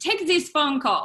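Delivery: put-on French-accented voice. Recalling the chef handing over a phone call while serving tables, French accent. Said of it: "sorry for my French accent".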